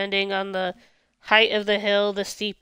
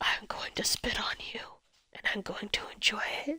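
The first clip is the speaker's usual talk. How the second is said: whispered, hushed voice with a ranting tone; 10 dB quieter than usual. Retelling a rant from a quiet Let's Play: imitating Mark whispering. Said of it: "rants in a whispery tone".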